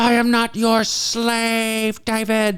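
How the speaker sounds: put-on very high, very slow, drawn-out crying, pleading. Retelling a dinner argument, imitating mom crying while speaking. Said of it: "She started to cry and go".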